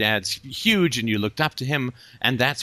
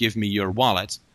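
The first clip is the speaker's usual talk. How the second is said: mock tough-guy voice, put on, much lower pitch; 3 semitones lower than usual. Describing a guy with a gun in an alley, the speaker acts tough. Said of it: "he's all tough".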